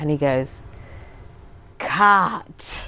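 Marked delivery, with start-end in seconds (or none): 1.8-2.9 slowly stretched, long drawn-out delivery. Imitating how he ends a scene after a long pause: long drawn-out cut. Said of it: "Like this long drawn out cut".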